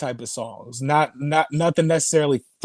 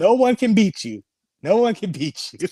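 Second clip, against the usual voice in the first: acted Latin accent, raised pitch; 5 semitones higher, 3 dB louder than usual. Quoting a man's reaction to what he was shown, imitating a Latin accent. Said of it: "He has like a Latin accent".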